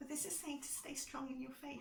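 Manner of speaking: voice breaking, close to tears. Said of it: "I'm sorry my voice is going".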